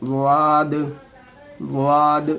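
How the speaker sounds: weighty, emphasized consonant. Teaching how to pronounce letters, demonstrating the sound with heavy, thick pronunciation. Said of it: "स्वाद को बिल्कुल मोटी करके बोलनी है".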